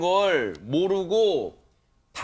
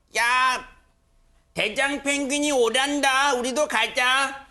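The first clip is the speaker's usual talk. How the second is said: high-pitched put-on cartoon penguin voice; 5 semitones higher than usual. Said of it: "펭수 성대모사를 해봤는데".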